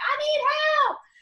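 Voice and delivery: very high, shrill, loud yelled-out call. Recounting holding a patient on the toilet, retelling a yell for help. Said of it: "and I yelled out".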